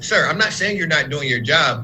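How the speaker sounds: ordinary talk, nothing marked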